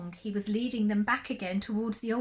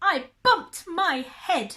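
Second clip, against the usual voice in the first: small, cross, annoyed voice, high-pitched and loud; 7 semitones higher, 6 dB louder than usual. Narrator reading a story, the little rabbit answers from the well: cross little voice. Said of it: "A rather cross little voice answered".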